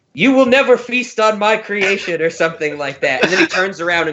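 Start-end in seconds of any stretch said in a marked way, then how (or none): 0.2-2.3 high-pitched scream at full force. Retelling a movie scene of fighting off the space worm: imitating Geoffrey Rush screaming. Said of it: "Geoffrey Rush screams something like".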